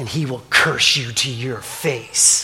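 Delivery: acted, very low, quiet, snarling devil voice. Retelling Job's trial, the speaker voices the devil's challenge to God, snarling. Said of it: "the devil snarled".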